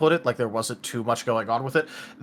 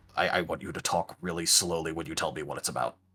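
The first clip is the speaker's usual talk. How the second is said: very low, clumsy, poor stage whisper; 8 semitones lower, 7 dB quieter than usual. As the guild master, leaning down to speak privately, in a poor half-whisper. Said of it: "lean down and whisper very poorly".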